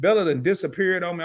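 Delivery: normal talking voice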